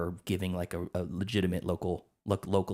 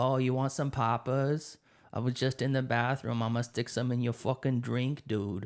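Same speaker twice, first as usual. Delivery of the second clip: put-on, exaggerated Boston accent, higher pitch; 5 semitones higher than usual. Mocking an actress trying too hard in her role, exaggerated boston accent. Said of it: "she's really trying hard with that Boston accent".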